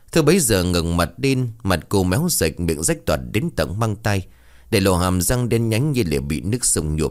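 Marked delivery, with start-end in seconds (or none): none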